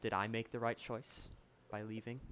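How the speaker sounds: ordinary talk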